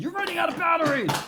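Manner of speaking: very high, cross, angry computer voice. Acting out their low-battery computer scolding them, mock-angry computer voice. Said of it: "My computer's so angry right now".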